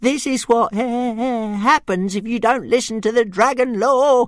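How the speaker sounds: very high, shrill, horrified shriek. Reading the story as a dragon peers round a cloak: Toothless shrieking in horror. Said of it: "shrieked Toothless to himself in horror".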